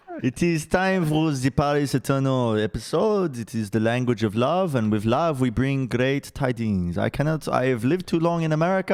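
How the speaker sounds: bad fake French accent speaking English. Host opening the paris eternal team preview episode: bad french accent. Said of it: "speak English in a bad French accent".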